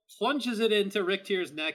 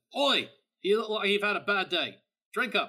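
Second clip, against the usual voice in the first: put-on Aussie-accented character voice; 2 semitones higher than usual. Voicing Grimnir as he passes someone a mug, in an Australian accent. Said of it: "And for some reason, I'm Australian".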